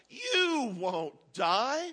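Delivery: snake voice, drawn-out hiss on the s, swooping. Narrator reading the garden story, the serpent answering the woman: hissing serpent voice. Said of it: "the serpent hissed".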